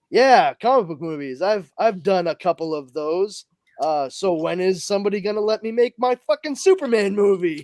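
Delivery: ordinary delivery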